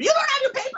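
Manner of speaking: shrill, very high, scolding yell. Retelling watching Judge Judy scold a woman on TV: imitating Judge Judy yelling.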